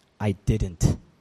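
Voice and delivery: icy, unfriendly, cold-sounding reply. Retelling a film scene where Salieri answers a priest: cold Salieri line. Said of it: "Salieri kinda turns to him coldly".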